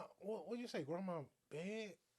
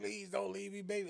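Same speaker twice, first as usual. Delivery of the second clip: mock crying voice; 3 dB louder than usual. Imitating a man who cries and begs: imitating a man crying.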